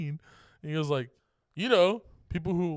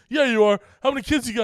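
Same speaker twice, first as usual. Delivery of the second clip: very loud, high-pitched taunting jeer; 7 semitones higher, 9 dB louder than usual. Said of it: "sounded like he was a teenager picking on a kid".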